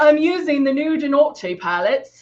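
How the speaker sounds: put-on, faked English accent. Doing eyeshadow and naming the palettes in use, in an English accent. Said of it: "I'll talk with an English accent now".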